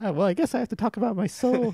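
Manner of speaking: put-on, high little old lady voice. Imagining selling soul insurance to an old lady, her reply in little old lady voice. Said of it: "She'd be like".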